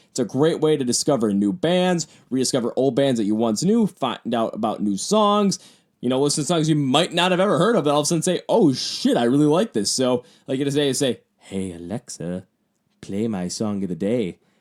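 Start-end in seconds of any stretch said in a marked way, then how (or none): 11.4-14.3 slow, drawn-out, half-whispered voice. Recording in a room with an Alexa that mustn't activate, half-whispering. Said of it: "why'd I whisper?".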